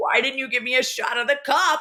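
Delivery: put-on high yelling. Imagining the editor yelling at the cameraman, imitating the editor yelling. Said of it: "the editor was probably yelling at the cameraman".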